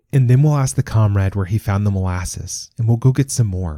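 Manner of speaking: ordinary delivery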